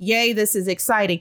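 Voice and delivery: normal talking voice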